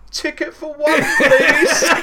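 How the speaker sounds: shrill, very high, loud shout. In a massive cinema queue, Robert calls out to the ticket seller, retelling Robert's shout. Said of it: "Robert just shouts out".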